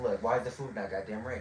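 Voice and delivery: acted, very quiet, irritated, agitated griping. Retelling complaining about slow food while waiting: imitating own agitated past complaint. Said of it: "I'm a little bit agitated".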